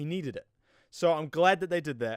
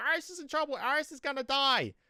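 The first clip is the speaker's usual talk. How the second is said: high, far-off, frantic mock scream, pitched way up. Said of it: "he starts screaming at Barry like".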